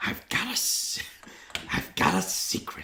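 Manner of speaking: hushed, breathy, quiet whisper. Asked how Gilbert Gottfried sounds whispering, speaker tries it: whispered Gilbert Gottfried impression. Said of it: "How does Gilbert Gottfried sound whispering?".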